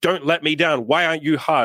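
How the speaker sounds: acted, very high-pitched screaming. Acting out someone screaming at their own body: acting out screaming. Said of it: "screaming at our dick".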